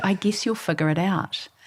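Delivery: low-key, quiet, soft hushed voice. Retelling your husband's answer after you said you were way cooler than him, imitating him speaking quietly. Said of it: "he quietly said".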